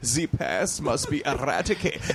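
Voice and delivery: put-on German-accented delivery. Recalling a line done for The Pest, in a German accent. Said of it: "I had to do a German accent".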